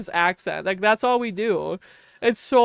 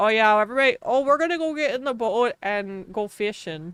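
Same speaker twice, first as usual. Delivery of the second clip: exaggerated thick Wisconsin accent. Imitating drunk Wisconsinites out on a lake: exaggerated Wisconsin accent. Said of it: "We're all just like".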